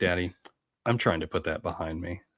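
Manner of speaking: straight-faced, deadpan delivery. Retelling a young daughter's reply to a joke: imitating daughter, straight-faced. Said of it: "super, like, straight look on her face".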